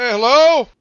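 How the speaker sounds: high, loud shouted delivery. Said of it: "and just shout".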